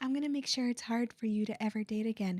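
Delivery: mocking little ooh voice. Acting out what someone says to a person, in a mocking little ooh voice. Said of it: "in your little ooh voice".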